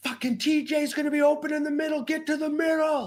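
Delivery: play-acted shrill scream at very high pitch. Retelling a moment at a game when a player locked eyes: retelling a scream. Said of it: "and I'm screaming".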